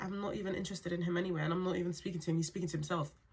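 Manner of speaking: ordinary talk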